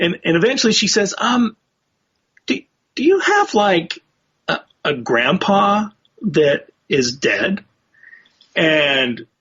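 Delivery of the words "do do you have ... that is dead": put-on hesitant, slow, halting, careful, word by word. Retelling a psychic's careful question to a police officer: imitating a hesitant, careful question. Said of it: "this girl really was choosing her words carefully".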